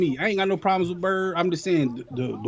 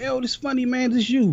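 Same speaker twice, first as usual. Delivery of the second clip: put-on, high, said through a laugh; 6 semitones higher than usual. Retelling how someone accused them of being in a video: imitating someone laughing. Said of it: "they came laughing like".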